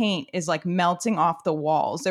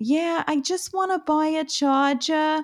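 heavy put-on Brooklyn accent, pitched up; 8 semitones higher than usual. Doing the accent for people at work who asked, thick brooklyn accent. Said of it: "a really thick Brooklyn accent".

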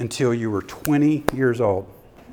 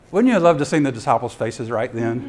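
ordinary talk, nothing marked

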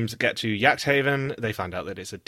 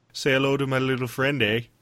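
mock Canadian gangster accent, higher pitch; 3 semitones higher than usual. Joking about Canada's answer to a gangster film, speaker does a Canadian Scarface impression. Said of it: "[name]' Canadian Scarface".

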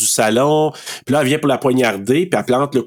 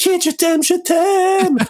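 mock, very high, shouted cry. Retelling a scene where Rob cries out to Kit, imitating Rob shouting. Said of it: "Rob qui crie là".

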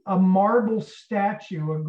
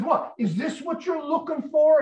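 put-on high, furious screaming outburst; 8 semitones higher than usual. Retelling how Tony reacted, imitating someone screaming and swearing. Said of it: "Tony just starts screaming and swearing at him".

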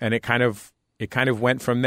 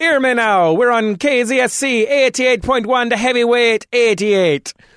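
put-on patois accent, radio-style voice; 13 semitones higher, 8 dB louder than usual. Imitating a station's official radio voice on air: put-on patois accent.

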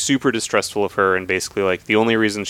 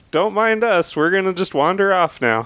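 put-on fake cheerful merchant voice, higher; 11 semitones higher than usual. Retelling a scene where a gruff character pretends to be a cheerful merchant captain: Shran faking a cheerful merchant captain. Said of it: "having to pretend to be like".

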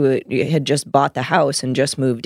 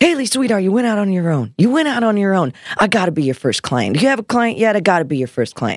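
put-on New York accent, higher; 6 semitones higher than usual. Recounting an older client's call after the speaker went solo, imitating Neil's New York accent. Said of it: "he's got his New York accent".

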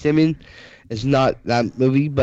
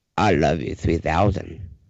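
very low, deep put-on voice, dropped way down; 9 semitones lower than usual. Quoting a favorite movie line to friends, in a Morgan Freeman voice. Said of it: "Dude you just said that in your Morgan Freeman voice".

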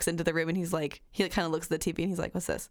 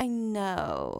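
put-on flirtatious, lingering coo, know drawn out. Imitating a character who talks to people: imitating a flirty voice. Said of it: "flirty, almost, like, orgasm face".

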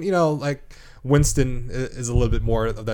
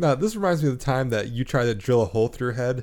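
ordinary talk, nothing marked

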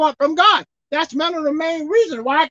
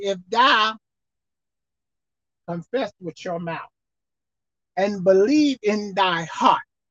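very slow, deliberate, each word drawn out; 8 semitones lower, 6 dB quieter than usual. Speaker repeats a scripture verse to listeners, saying it slowly. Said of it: "I'll say it slowly".

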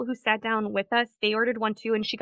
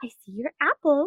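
sweet, princess-like voice; 4 semitones higher than usual.

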